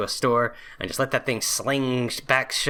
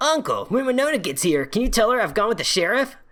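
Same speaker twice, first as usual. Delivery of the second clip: high voice with a swooping, swinging tune; 10 semitones higher than usual. Voicing the game's protagonist who asks his uncle for a favour: vaguely Sonic-like voice. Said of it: "I can make it sound like Sonic, vaguely".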